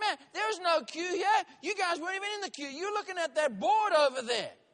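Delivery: high, loud yelling. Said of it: "he just starts yelling at me".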